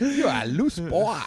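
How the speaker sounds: fake Vietnamese accent. Joking around with another speaker, in a mock Vietnamese accent. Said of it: "you sounded like Vietnamese for a second".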